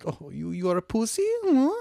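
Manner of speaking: bad put-on Italian accent, sing-song. Imitating Italians mocking someone who puts ice in coffee: bad mock Italian accent. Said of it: "We both suck at that accent".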